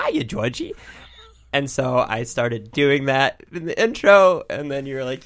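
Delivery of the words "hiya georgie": very high put-on clown voice. Doing the intro in the Pennywise voice: Pennywise voice. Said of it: "the Pennywise voice, like".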